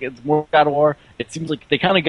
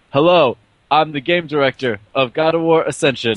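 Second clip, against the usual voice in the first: put-on, mock-detached, uninterested voice, slower. Act out the game director introducing himself at the start, imitating a very detached game director. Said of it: "he's like very detached".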